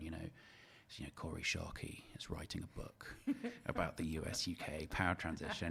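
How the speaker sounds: mock grave, hushed, very somber funereal tone. Retelling what an acquaintance said at lunch, retelling a very somber tone. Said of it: "in this very somber tone".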